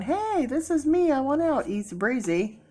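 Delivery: bright, eager voice.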